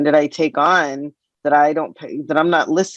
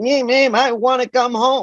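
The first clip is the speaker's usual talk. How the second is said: put-on slow, pitched-up, spoiled-kid bratty whine; 9 semitones higher than usual. Retelling how he acted like a brat: imitating a bratty whine. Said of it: "I could see him being a brat".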